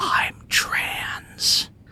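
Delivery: mouthed stage whisper. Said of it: "a little bit of a stage whisper".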